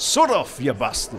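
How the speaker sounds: half-convincing, borderline Yorkshire accent. Called on in a pub accent game to say a sentence: yorkshire accent. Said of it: "yorkshire accent you have to say a sentence".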